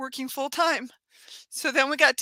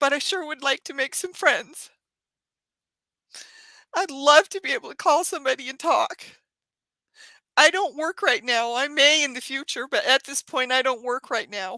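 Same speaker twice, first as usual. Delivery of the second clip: tearful, crying while speaking. Addressing a group of listeners, crying while speaking. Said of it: "I'm sorry that I'm crying".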